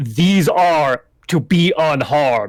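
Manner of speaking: loud, booming bellow. Game master voices a figure addressing all his troops, bellowing to troops. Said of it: "he bellows to all of his troops".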